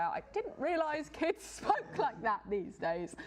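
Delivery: high, slow words spoken laughing, amused.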